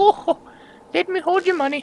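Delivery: put-on very high, sweet, pleasant little old lady voice. Speaker acts out what the pleasant-sounding lady says, in a nice old lady voice. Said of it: "She's like a nice old lady".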